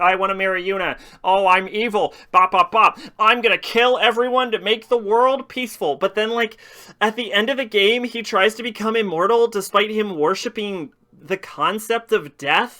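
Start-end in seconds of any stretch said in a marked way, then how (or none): 0.0-6.0 mocking put-on villain voice. Mocking a game villain who is called boring: mocking Seymour impression. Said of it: "He's like".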